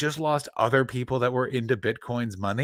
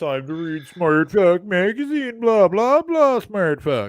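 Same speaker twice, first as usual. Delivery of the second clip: jokey, teasing, mocking put-on voice; 6 semitones higher, 7 dB louder than usual. Doing an impression of Chris Betts for the other speaker. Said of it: "This is my impression of Chris Betts".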